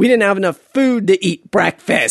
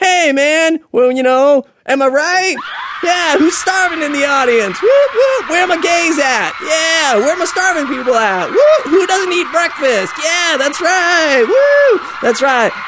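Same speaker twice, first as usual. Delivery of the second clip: mock hyped, crazy stand-up comic, higher; 8 semitones higher than usual. Imitating a crazy stand-up comic hyping a crowd: imitating a crazy stand-up comic. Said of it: "like one of those crazy stand-up comics".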